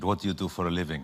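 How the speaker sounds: put-on speaking with Israeli accent. Recounting an airport soldier's questions on the way to Israel, in a put-on Israeli accent. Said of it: "I don't know what this accent is, by the way, but let's pretend it's Israeli".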